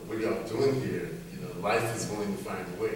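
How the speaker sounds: usual speaking voice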